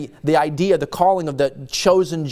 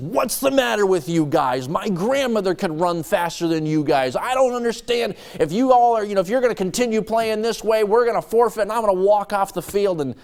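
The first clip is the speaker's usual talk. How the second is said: angry, pitched-up ranting voice; 5 semitones higher than usual. Acting out a coach at halftime whose team is losing: imitating an angry coach. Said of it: "like an angry coach at halftime".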